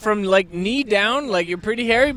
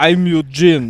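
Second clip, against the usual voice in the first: bad put-on male Russian accent, lower and louder; 5 semitones lower, 5 dB louder than usual. Retelling how a man introduced himself, imitating Eugene's Russian accent. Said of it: "That wasn't a good Russian accent".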